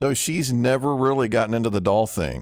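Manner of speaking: ordinary delivery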